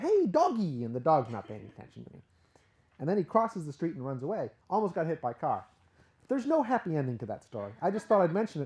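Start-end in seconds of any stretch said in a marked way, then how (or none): 0.0-0.8 mock yelling, loud. Retelling shouting out a car window at a runaway dog, retelling a yell. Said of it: "I'm yelling out the window".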